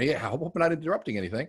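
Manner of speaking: cheerful, upbeat inflection. Teaching how to ask someone who is busy, demonstrating with positive inflection. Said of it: "if you ask that with a positive attitude, voice inflection".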